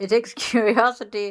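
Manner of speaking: laughing while reading aloud. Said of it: "I'm laughing because Alex is listening".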